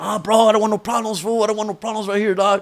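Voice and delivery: frightened big man voice, scared and backing down. Retelling how the big guy who owed money backed down: imitating a scared guy. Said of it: "big ass fool gets all scared, like".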